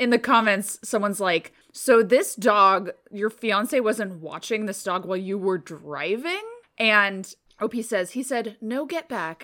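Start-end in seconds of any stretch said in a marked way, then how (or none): 8.6-9.4 put-on calmest possible voice, even and unhurried. Retelling how the fiance told the dog to get back, imitating a very calm voice. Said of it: "in the calmest voice ever".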